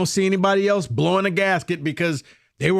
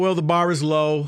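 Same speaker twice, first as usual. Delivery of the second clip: ordinary talk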